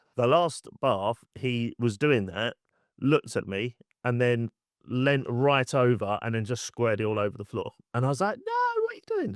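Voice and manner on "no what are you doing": squeaky, very high, fast, playful game-like voice. Retelling what they said to him at bath time, high-pitched playful voice. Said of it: "I kind of do it high pitched".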